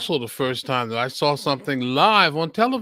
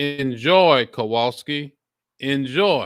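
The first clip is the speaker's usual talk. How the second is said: ordinary delivery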